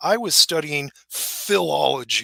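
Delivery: mock bitter, spiteful, disdainful tone. Quoting what a man said, mimicking a bitter tone. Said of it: "you can feel the the spleen in his voice".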